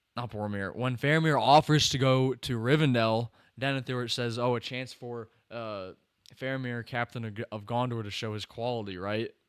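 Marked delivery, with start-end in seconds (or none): none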